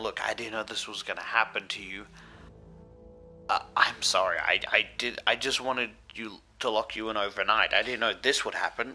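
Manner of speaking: acted, earnest, apologetic begging voice. Retelling a story where he pleads with a corpse: retelling a plea. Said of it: "So he started pleading with it".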